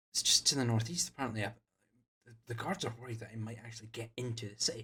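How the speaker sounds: whispering in hushed tones. Game narrator voicing one of two teenage boys walking past, in a hushed whisper. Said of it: "in hushed whispers".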